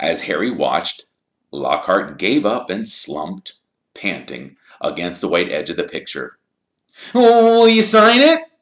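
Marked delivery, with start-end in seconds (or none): 7.1-8.4 keen, eager, shrill, very high and loud. Narrator reading Colin asking Harry to sign a picture, eager. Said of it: "said Colin eagerly".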